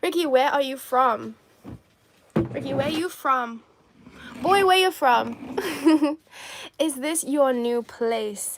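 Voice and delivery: put-on Caribbean accent, very loud. Acting out what ricky says in her character bit, caribbean accent. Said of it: "Caribbean accent on top".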